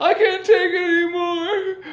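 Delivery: high, loud, mock screaming man's voice.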